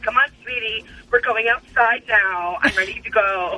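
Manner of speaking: put-on talking like a little old grandma. Voicing a ten-year-old dog as if she could talk, old grandma voice. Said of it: "she'd totally be talking like a grandma".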